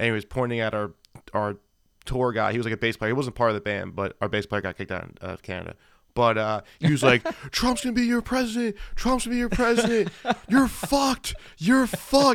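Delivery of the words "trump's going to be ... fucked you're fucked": shrill, hyped-up, very high mock taunting scream. Speaker retells a man on the merch booth screaming at him; retelling someone screaming. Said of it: "Just screaming at me".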